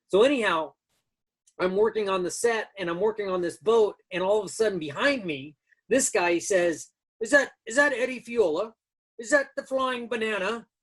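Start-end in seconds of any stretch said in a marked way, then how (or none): 7.2-10.6 put-on British English accented voice. Retelling a man on a set calling out from behind them, in an English accent. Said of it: "in his English accent".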